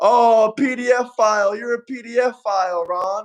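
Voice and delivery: play-acted, very slow, dragged-out drawn-out scream. Retelling how a guy went up at a speaking event: imitating someone screaming. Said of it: "started screaming".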